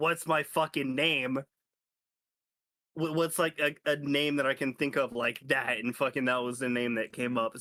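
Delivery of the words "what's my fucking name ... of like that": ordinary talk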